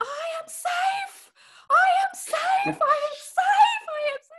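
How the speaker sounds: high, very slow, booming top-of-lungs yell. Retelling crossing a bridge and calling out recovery words: imitating her own yell. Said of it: "yelling out at the top of my lungs".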